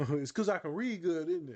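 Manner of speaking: sarcastic, high put-on voice. Answering an imagined "you're one of the good ones" remark: put-on sarcastic tone. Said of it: "That's me being sarcastic".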